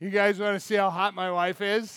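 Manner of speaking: mock drunk slurred speech. Retelling a story, acting out the husband boasting to the guys in a mock drunken slur. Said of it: "you can almost imagine the drunken slur when he's like".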